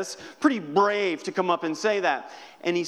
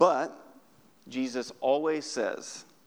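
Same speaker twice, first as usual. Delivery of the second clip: ordinary delivery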